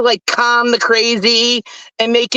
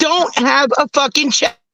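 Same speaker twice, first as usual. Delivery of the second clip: very slow, drawn-out, angry delivery; 3 semitones higher than usual. Two people arguing over each other until a third tells them to stop: yelling. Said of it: "Both of you stop yelling".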